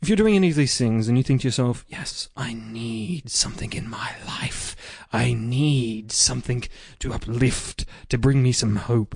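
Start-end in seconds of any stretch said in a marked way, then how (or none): 1.9-9.2 slow, sinister whisper with "need" drawn out. Voicing a listener's imagined thoughts during a plug: evil-sounding voice. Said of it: "Why did the voice sound so evil?".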